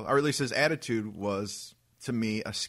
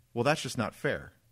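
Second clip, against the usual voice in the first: acted dead-serious, sincere, matter-of-fact complaining tone. Retelling what a customer said about the wine: imitating a straight-faced reply. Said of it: "what he says to me with a straight face".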